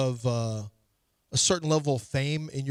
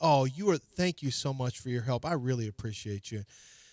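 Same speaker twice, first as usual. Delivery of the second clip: imitated really friendly tone; 4 dB quieter than usual. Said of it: "like, really friendly".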